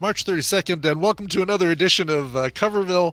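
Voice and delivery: upbeat announcer intro voice. Retelling an April Fool's show intro: imitating own fast delivery. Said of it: "I said it really fast".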